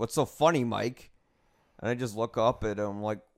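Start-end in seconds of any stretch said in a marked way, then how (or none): 0.0-1.1 very defensive, prickly, on-guard, accusing tone. Retelling a manager's accusation during a meeting: imitating someone speaking defensively. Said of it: "and then very defensively".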